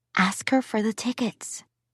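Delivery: loud whisper. Reading a daughter's line to her father aloud: loud whisper. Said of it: "She lowered her voice to a loud whisper".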